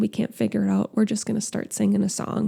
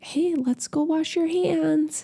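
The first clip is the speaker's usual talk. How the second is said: put-on high, sing-song parentese, like a mother to a little child; 7 semitones higher than usual. Showing how to ask a child to wash hands: parentese voice. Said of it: "let's use that".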